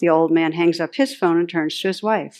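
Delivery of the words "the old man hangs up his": plain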